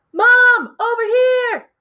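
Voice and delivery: very high, calling-out yell. Showing when to use a yelling voice, calling out to get Mom's attention. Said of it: "use your yelling voice if you're trying to get someone's attention".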